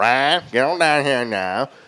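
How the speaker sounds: slow, exaggerated, put-on East Texas drawl. Joking about how a name is said in Texas: put-on East Texas accent. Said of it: "a little East Texas flavor".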